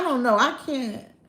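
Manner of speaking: ordinary delivery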